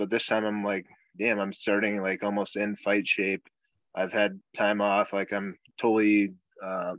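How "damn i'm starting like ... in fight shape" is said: ordinary talk, nothing marked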